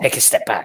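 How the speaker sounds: soft whispered aside. Playing a character who turns to two others: whispering in character. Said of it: "And I whisper to these two".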